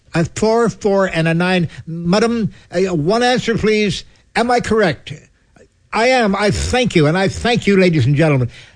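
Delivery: high, booming fake Oxford stage mentalist patter.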